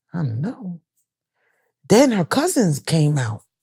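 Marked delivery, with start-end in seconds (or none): 0.1-0.8 quieter, mumbled muttering under the breath. Retelling her reply from the couch: imitating someone muttering under breath. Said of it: "she kinda said it under her breath".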